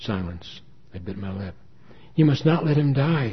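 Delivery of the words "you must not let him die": deeply compelling voice, high-pitched and loud. A woman on the phone speaks to the narrator about her father, utterly compelling. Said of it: "Her voice was so utterly compelling that my hand trembled".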